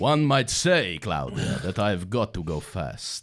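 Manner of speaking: bad put-on Italian accent. Joking about a voice actor's roles, vaguely offensive Italian accent. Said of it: "Doing a vaguely offensive Italian accent".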